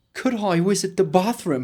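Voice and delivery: fake, put-on English accent. Jokingly asking for something in english, in a put-on british accent. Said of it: "Así con el acento inglés".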